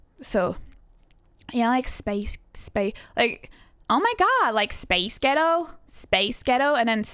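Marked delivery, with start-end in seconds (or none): 3.9-6.8 put-on American accent. Showing how a phrase sounds when said with a put-on american accent.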